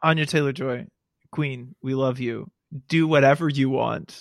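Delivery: ordinary talk, nothing marked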